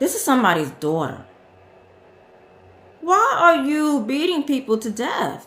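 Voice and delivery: voice on the edge of crying, fighting back tears. Talking about an investigation into a killing, holding back tears. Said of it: "I'm trying not to cry right now".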